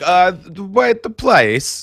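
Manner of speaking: bad put-on French accent, slightly high. Imitating the main actor's odd movie accent: Christopher Lambert's bad accent. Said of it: "He sounds like, he sounds exact, he's like".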